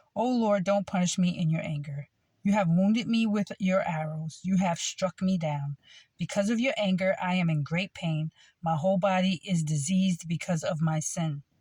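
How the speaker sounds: ordinary talk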